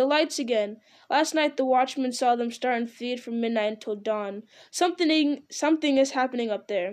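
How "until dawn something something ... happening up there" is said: plain reading voice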